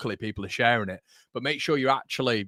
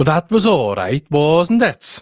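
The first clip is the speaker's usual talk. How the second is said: very loud put-on Welsh accent; 4 semitones higher, 11 dB louder than usual. A speaker tries out his best welsh impression: welsh accent impression. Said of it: "my best uh, Welsh impression".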